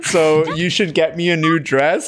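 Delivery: ordinary talk, nothing marked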